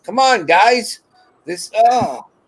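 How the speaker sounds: yelling. Retelling yelling at him through the window: imitating own yelling. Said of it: "yelling at him".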